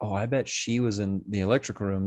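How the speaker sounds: ordinary delivery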